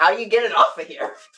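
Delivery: mock flabbergasted voice. Retelling an uncle's reaction to camera glasses at a funeral: imitating a flabbergasted uncle. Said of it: "flabbergasted by the situation".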